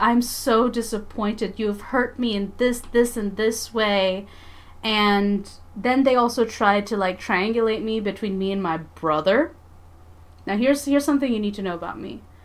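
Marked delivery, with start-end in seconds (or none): 0.0-4.3 put-on calm, sorrowful, disappointed tone. Retelling how they listed the speaker's faults nonstop, imitating a calm, sad voice. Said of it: "in such a like calm and sad voice".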